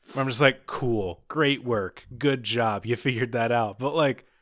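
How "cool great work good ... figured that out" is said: mock sarcastic tone, lower pitch. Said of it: "I come off sounding incredibly sarcastic".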